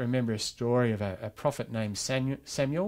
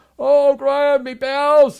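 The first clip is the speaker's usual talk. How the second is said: put-on shrill, very loud, high-pitched old lady voice; 14 dB louder than usual. Greeting people at the door each morning, the speaker quotes the reply in Elizabeth's loud voice. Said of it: "she'd say that in a loud voice".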